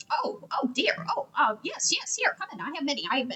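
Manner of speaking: put-on startled, flustered, dithering little old lady voice. A little old lady answers someone who urgently needs a battle axe, little old lady voice. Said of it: "there's a little old lady in there".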